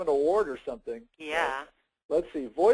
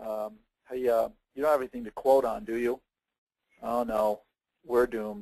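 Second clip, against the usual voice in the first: mopey, low-energy, low, unenthusiastic mumble; 6 semitones lower than usual. Demonstrating a sales call voicemail, the speaker talks with voice way down low. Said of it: "my voice is way down here".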